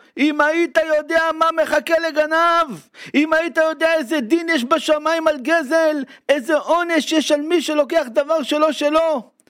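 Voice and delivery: very high, shouting preacher voice. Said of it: "צועק בקול שלו".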